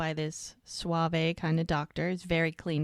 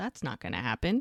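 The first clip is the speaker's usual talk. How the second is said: ordinary talk, nothing marked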